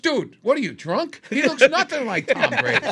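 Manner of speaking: mock, very loud, very high, exasperated, upset blurt. Retelling a man's reaction in Boston, retelling an upset outburst. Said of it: "Anthony got upset".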